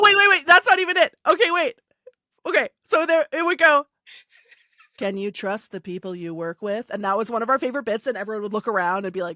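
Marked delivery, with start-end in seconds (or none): 5.0-6.9 soft, monotone dystopian robot voice. Speaker describes a favorite bit, doing the dystopian robot man voice. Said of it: "like robot man voice robot would come on and do like a monologue".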